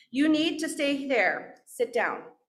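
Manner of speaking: put-on sweetest yet firmest tone. Retelling someone's order to stay and sit down: imitating a nice but stern voice. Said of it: "in the nicest, most stern voice".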